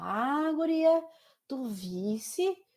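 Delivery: very slow southern Brazilian gaúcho accent, "bah" drawn out. Showing how Gaúchos talk, in a Gaúcho accent. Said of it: "Não conheço um gaúcho. É, eles falam assim, né?".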